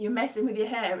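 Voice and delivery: normal talking voice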